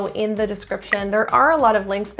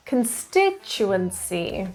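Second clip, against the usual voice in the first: constituency with stress on second syllable -stit-; 4 dB quieter than usual. Listing English word stress exceptions for learners to write down: stress on 'consti' in Constituency. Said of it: "The stress is on the second syllable".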